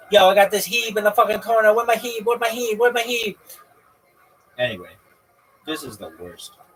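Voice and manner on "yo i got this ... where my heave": very loud, high, mocking gamer chatter. Mocking how another player talks, imitating another player. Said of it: "I'm gonna start talking like this motherfucker".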